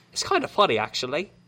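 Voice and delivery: speech in a British accent.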